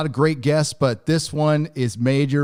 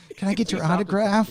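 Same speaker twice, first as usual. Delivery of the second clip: put-on sheepish, shy voice, higher pitch; 6 semitones higher than usual. Retelling how a nervous fan first approached at a meetup: imitating Ryan being sheepish. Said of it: "You're all sheepish".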